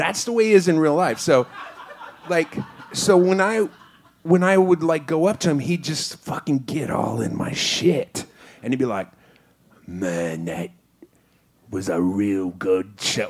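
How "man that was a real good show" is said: put-on deliberate, slow, drawn-out Australian accent. Retelling what a celebrity said after a show, imitating Russell Crowe's Australian accent. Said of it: "I don't fucking know how to speak Australian".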